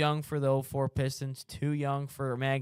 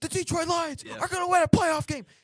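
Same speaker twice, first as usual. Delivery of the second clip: very high, ecstatic, frantic play-by-play announcer scream; 4 dB louder than usual. Retelling an unbelievable Lions game call for a listener, Dan Miller screaming a call. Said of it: "like he's crashing out".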